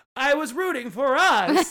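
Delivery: very slow, drawn-out delivery. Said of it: "She was like".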